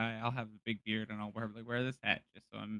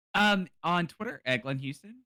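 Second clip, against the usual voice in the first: high-pitched, loud, slow voice rising in pitch. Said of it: "His voice is getting higher and higher".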